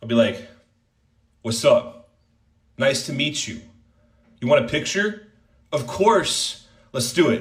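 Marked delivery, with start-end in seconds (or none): 1.4-7.4 warm, welcoming, positive and upbeat delivery. Showing how someone greets a fan for a picture: Hassan impression. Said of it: "as I do my Hassan impression".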